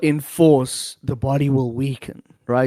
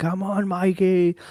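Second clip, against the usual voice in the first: mild, high-pitched cheer like put-on screaming; 5 semitones higher, 5 dB quieter than usual. Retelling a fight where a friend in the crowd was screaming: imitating someone screaming. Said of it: "busy screaming".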